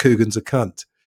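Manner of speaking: ordinary delivery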